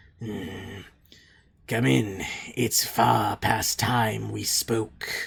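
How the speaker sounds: rasping, scratchy undead creature voice. Narrator voicing a ghast speaking to the players, in a scratchy ghast voice. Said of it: "in kind of a scratchy voice".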